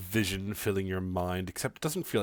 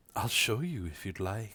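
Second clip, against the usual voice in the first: strangely womanly, oddly feminine voice. Voicing a mysterious voice heard in a player's mind: oddly feminine voice. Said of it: "The voice is oddly feminine".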